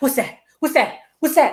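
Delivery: quick, rattled-off cartoon squirrel jabber. Describing someone who talked fast: imitating the Hoodwinked squirrel. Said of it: "it was like he was a squirrel".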